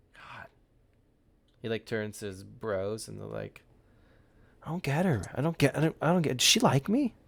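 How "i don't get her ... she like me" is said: loud stage whisper. Playing a guy who turns to his bros about a girl, loud whisper to his bros. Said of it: "I'm whispering to my bros".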